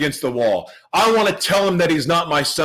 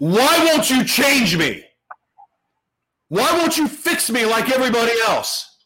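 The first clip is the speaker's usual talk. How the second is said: high, furious, rage-filled angry scream; 7 semitones higher than usual. Retelling getting angry in jail: imitating screaming at god. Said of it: "I started screaming at God".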